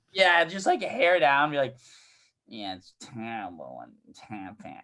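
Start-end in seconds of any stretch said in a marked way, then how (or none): 2.4-4.8 barely-there hushed voice, almost under the breath. Doing an impression of Dan meeting the comics at the bar: Dan impression. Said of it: "Is that your Dan impression?".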